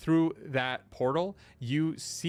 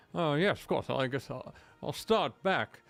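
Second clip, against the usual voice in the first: tipsy, day-drunk put-on character voice. Voicing a day-drunk character in a game who is having the best time: day-drunk character voice. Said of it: "he's day drunk, and he is having the best time".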